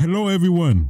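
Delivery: very high-pitched voice, like someone presenting. Introducing the daddy of PlayStation: Shuhei Yoshida impression. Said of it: "that's my best impression".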